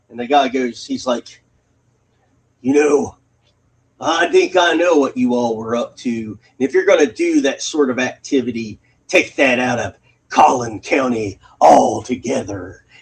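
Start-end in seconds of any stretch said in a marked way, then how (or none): 2.6-12.7 menacing, threatening cop voice. Retelling what a man said to a young couple by a post office, imitating his menacing words. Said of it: "he said it so menacingly".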